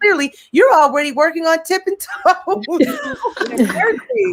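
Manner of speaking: high, laughing delivery while talking.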